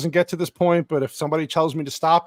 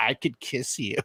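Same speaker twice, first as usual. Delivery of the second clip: unsettling, creepy villain's henchman voice; 3 semitones lower, 8 dB quieter than usual. Retelling a line of the Joker's henchman: imitating a creepy voice. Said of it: "His fucking voice was creepy as hell".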